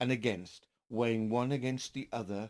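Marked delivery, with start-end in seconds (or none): none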